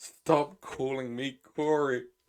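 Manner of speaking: put-on little kid crying hard, tearful and slow. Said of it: "properly crying".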